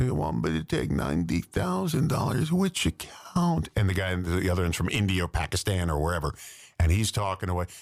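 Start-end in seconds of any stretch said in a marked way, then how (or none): 0.0-3.7 put-on old lady voice, higher and slower. Retelling how a woman on YouTube fools phone scammers, old lady voice. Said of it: "she pretends to be an old lady".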